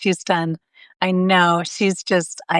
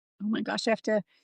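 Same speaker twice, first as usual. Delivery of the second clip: tearful voice catching, choking up; 3 semitones higher, 10 dB quieter than usual. Reacting to the other speaker's moving story, tearful, starting to cry. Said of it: "now I'm crying".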